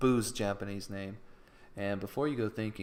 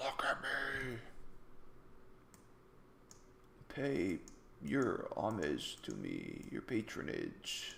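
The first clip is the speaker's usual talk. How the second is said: sinister, creepy demonic voice with swooping pitch; 8 dB quieter than usual. Voicing the figure in a panel being drawn: creepy demonic voice. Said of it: "it's a creepy demonic voice".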